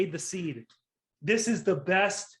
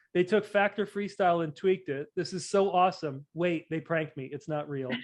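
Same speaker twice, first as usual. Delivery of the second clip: ordinary talk, nothing marked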